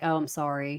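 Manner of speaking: put-on dull, forced, low flat monotone. Describing a child made to say sorry, mimicking a monotone apology. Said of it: "very just, like, monotone".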